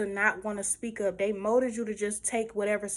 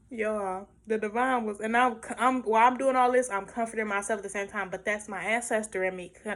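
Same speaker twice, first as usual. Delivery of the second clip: ordinary talk, nothing marked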